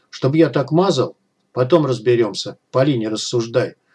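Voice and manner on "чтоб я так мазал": ordinary delivery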